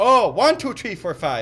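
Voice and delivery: put-on Irish accent. Counting to warm up into an accent for friends, fake Irish accent. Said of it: "That's how you get into the Irish accent".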